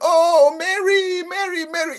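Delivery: slow, very high, drawn-out mourning scream. Retelling how a mourner screams at a funeral: imitating someone screaming. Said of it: "even though she's screaming".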